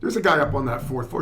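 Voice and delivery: ordinary talk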